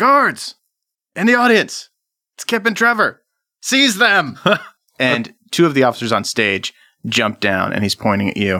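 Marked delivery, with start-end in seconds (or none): 0.0-4.4 very high, shrill, bellowed yelling. Game master voicing a man who spots the players in the audience, yelling. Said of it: "And he yells".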